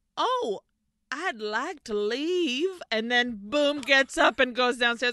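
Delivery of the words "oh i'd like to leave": slow, put-on Southern accent. Retelling a scene, the speaker quotes Barbara's reply: quoting Barbara in Southern accent. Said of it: "now she's like a Southern".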